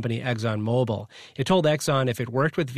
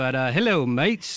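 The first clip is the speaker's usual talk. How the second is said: practised, pitched-up put-on British accent. Speaker tells co-hosts they're British now and greets them in a put-on British accent. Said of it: "I've been practicing".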